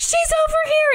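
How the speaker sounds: acted panicked shriek, very high-pitched. Retelling a panicked maid calling out to the family: imitating a panicked scream. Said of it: "and screams to try to get the family's attention".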